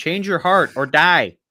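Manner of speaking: put-on old man voice. Joking about being a nice old man, in character: loud old man voice. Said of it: "loud old man".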